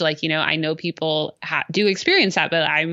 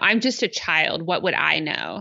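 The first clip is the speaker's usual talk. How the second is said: bratty, snotty, falsely humble sing-song. Retelling what Joey says when she gets snotty: snotty Joey impression. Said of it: "she kinda gets snotty".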